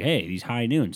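plain

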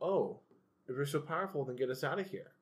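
goading, condescending, talking-down taunt. Retelling a movie scene, imitating Aladdin talking down to the genie. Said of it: "talking down to the genie".

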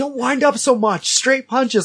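very high-pitched shouting. Retelling a friend cheering him on in a fight: imitating someone shouting instructions. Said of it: "I can hear Matt shouting instructions like".

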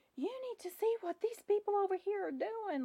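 acted out, very high, hectoring scream. Retelling a woman screaming at the girl behind the counter, imitating someone screaming. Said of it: "she's like screaming at the girl".

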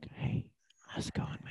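put-on whisper. Acting out whispering in someone's ear as a greeting: put-on whisper. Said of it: "go up to people's ears and you're like".

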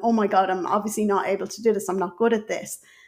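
normal talking voice

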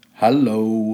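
deep, low-pitched voice. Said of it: "She's got a deep voice".

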